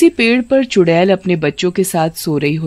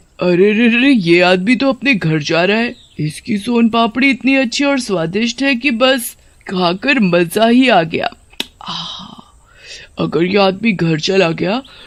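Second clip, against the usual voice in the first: sly, greedy, scheming storybook cartoon witch voice. In a cartoon story, the witch talks to her children, in a witch character voice.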